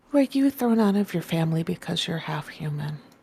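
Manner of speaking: very gentle, soft, tender, careful voice. A player voicing Fig asks Fel a question, in a very gentle tone. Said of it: "says in a very gentle tone".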